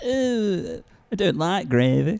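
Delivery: loud, very slow drawl, long stretched "oh". Doing an impression of Elliot for the others. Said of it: "we do it again?".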